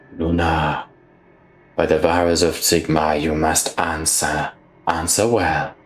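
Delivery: soft, slow whisper. Her character channels a soft light from her hands, whispering to herself. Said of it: "as she sort of whispers to herself".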